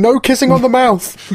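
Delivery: loud, high-pitched shouting. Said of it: "she's shouting".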